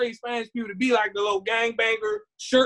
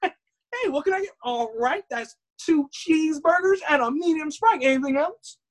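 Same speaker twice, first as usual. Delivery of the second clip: bright, chipper, perky, pitched-up cashier voice; 5 semitones higher than usual. A speaker acts out a cashier at a Beverly Hills type McDonald's: imitating a perky cashier. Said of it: "Where everybody's all perky".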